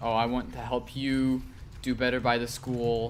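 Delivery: plain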